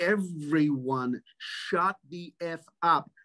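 very slow, emphatic, every word drawn out. Retelling a guy silencing chatter during a rehearsal, retelling a scream at the top of his voice. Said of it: "immediately screams at the top of his voice".

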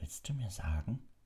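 hushed whisper. Hiding in a cupboard while a companion listens at the door, whispered. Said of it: "wisperte Harry".

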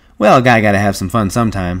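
ordinary delivery, nothing marked

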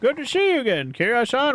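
put-on old man voice. Voicing a character greeting someone again, in an old man voice. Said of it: "Why am I going old man voice all of a sudden?".

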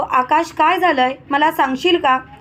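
ordinary delivery

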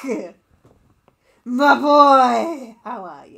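very loud, wild, unhinged voice. Voicing the character Maya greeting Nick: unhinged Maya voice. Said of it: "I give Maya the most unhinged voice".

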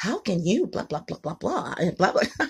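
hushed, breathy, whispered way of talking. Imitating how a woman on a YouTube channel talks. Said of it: "she talks like this".

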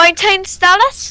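put-on British accent, very slow and drawn out. Playing a teen in a group scene, delivering the line in a British accent. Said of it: "I should probably put on a British accent".

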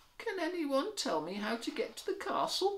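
tiny, very high-pitched, small voice. A little wolf, lost in the big city, asks for directions: asking quietly. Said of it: "He asked quietly".

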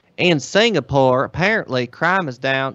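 slow, fake, put-on Southern US drawl. Joking about crime news from Singapore, the speaker uses a put-on Southern US accent. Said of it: "southern accent".

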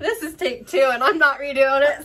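loud, high, giggly, laughing through words.

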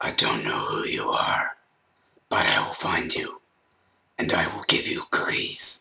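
breathy, sinister, menacing whispered demon voice. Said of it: "my "Demon Voice"".

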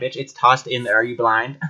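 ordinary delivery

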